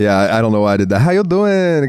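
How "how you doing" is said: put-on Puerto Rican accent, pitched very high. Greeting someone in a joking voice: put-on Puerto Rican accent. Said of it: "That's Puerto Rican".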